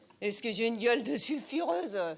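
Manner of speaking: put-on cocky, old-sounding voice. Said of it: "Voici la sulfureuse Mimi Marchand".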